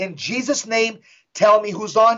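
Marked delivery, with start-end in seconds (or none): none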